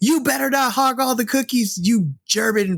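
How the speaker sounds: shrill, very high shouted yell. She runs up the stairs into the morgue to tackle Fredrich: yelling. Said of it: "as you hear her yelling".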